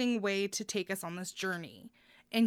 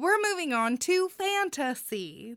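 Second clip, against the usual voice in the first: Californian accent, pitched up; 7 semitones higher than usual. Host moving on to the fantasy section while trying out accents, Californian accent. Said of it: "There's my Californian accent there".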